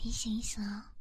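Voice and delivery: whispered throughout, no voice.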